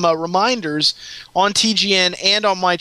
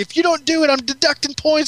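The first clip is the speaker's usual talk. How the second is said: high, play-acted, furious, angry ranting yell; 8 semitones higher than usual. Speaker retells a guy yelling at his team, retelling someone going ape. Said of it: "going ape crap on him".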